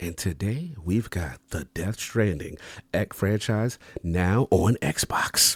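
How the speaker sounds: whispered, quiet delivery. Podcast host opening a new episode as asked, whispering into the mic. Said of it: "they want me to whisper in the mic".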